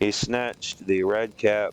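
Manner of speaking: ordinary delivery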